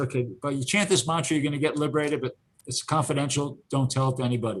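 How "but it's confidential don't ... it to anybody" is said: ordinary talk, nothing marked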